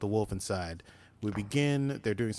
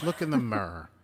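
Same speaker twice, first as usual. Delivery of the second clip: terrible put-on Irish accent. Trying out the phrase in a self-described bad Irish accent. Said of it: "my Irish accent is terrible".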